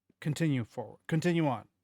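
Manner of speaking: highly authoritative, commanding delivery. A figure leans down slightly and speaks, very authoritative voice. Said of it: "With a very authoritative voice".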